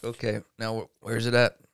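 normal talking voice

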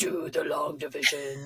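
over-the-top villainous evil voice. Speaker recalls the teacher's reply when they froze at their turn, imitating teacher's super evil voice. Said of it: "like the super evil voice".

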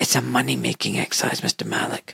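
hushed, barely voiced whisper. Retelling what people whispered to him about high complication rates, whispered. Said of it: "and then they whisper like this".

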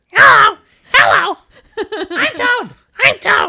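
very high, loud squeaky voice. Asked by the others to do the toad voice, doing a Toad voice. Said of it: "Do your toad voice".

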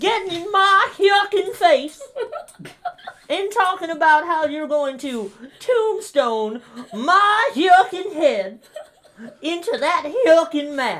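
very high-pitched, very loud cartoon voice. Doing the voice prompt Goofy against The Undertaker: Goofy voice.

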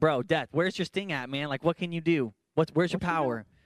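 put-on mocking, sarcastic tone with attitude. Retelling how he mocks death when he says that, acting out mocking death. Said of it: "he kind of mocks sin and death".

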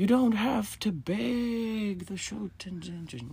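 very slow, very high, drawn-out yell, "beg" stretched. Retelling how people answered when asked why the prayer was removed: retelling a yell. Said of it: "they like yell and go".

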